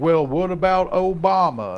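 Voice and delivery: put-on Southern accent. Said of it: "why do you put on the Southern accent".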